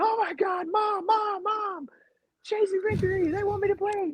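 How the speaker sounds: very high, thrilled, full-lung excited screaming. Retelling a friend's reaction to a phone call: imitating someone screaming excitedly. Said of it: "just screaming his lungs out".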